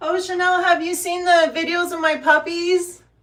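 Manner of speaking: very loud, high shout. Speaker calls to Chanel over barking dogs: shouting. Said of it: "I don't know why I'm shouting".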